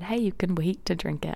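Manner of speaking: ordinary talk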